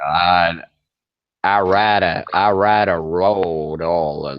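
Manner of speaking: slow, drawn-out Texan cowboy drawl. Mocking a viewer who might mute him: imitating Hank's American accent. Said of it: "try to copy his accent".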